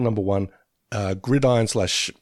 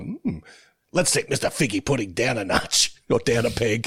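grouchy, grumbling, sour and grumpy put-on voice. Quoting a favorite cartoon moment: grouchy Moe voice. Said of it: "people being a bit grouchy".

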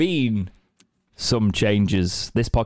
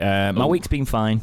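plain

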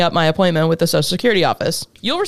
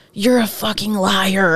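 hissed, slower. Narrator on the phone with a woman, before hanging up; hissed. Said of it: "I hissed and hung up".

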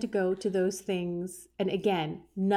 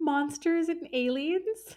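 pitched-up, laughing through every word; 8 semitones higher than usual. Reading out an item from a list: laughing while talking. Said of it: "I'm gonna laugh at this".

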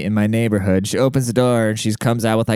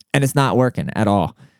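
usual speaking voice

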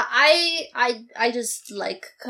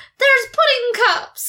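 put-on very high, loud child's yell; 12 semitones higher, 5 dB louder than usual. Retelling a movie scene where the kid finds food: imitating a kid yelling.

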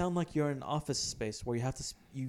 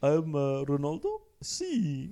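bad, very slow, drawn-out, swooping sing-song; 4 dB louder than usual. Doing a bad footballer impression for another speaker: bad Ronaldo impression. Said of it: "that's a really bad impression".

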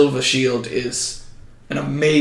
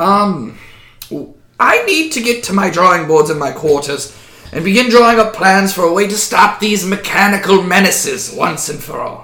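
put-on, pitched-up lizard creature voice; 5 semitones higher, 4 dB louder than usual. The lizardfolk leader of Rose Hall tells the party his next step: lizardfolk leader voice. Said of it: "a lizard folk walks from almost out of nowhere behind the throne and kind of walks alongside and looks directly at Squall. / He is the leader of Rose Hall and one of my trusted and most closest friend".

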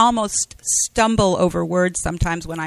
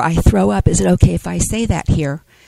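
whispering; 5 dB louder than usual. Retelling what was said to a teenager at a meeting: retelling a whisper. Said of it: "I whispered to her".

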